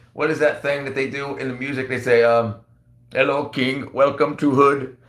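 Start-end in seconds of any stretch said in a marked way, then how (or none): 3.2-4.9 put-on Indian accent, laid on thick. Speaker showing he can do an Indian voice, quoting a line, Indian accent. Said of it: "I can even do like Indian voice".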